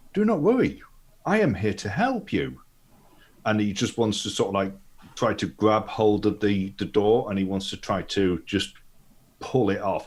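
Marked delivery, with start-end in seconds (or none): 0.1-2.6 high, swooping, borrowed voice. Voicing a metal golem approaching a caged captive: Leonard's voice from a golem. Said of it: "it just comes out as Leonard's voice".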